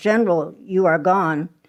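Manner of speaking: plain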